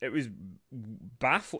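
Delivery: long pause, then a soft baffling. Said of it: "That was deliberate".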